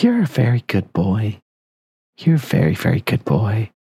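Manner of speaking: put-on young little girl character voice. Voicing a little girl who finds a dog-like man: little girl voice. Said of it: "and she's like".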